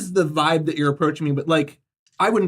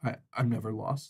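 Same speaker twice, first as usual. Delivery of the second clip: small, tiny, hushed voice, very quiet; 6 semitones lower, 12 dB quieter than usual. Recounting what a man said, quote him in a very small voice. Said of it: "he says in a in a very kind of small voice".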